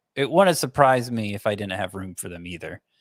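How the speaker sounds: normal talking voice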